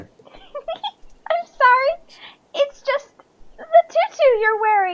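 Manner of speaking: words broken up by giggles throughout. Apologizing to another character while giggling at his tutu: giggling while talking. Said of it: "Why are you giggling?".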